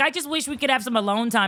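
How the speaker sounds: plain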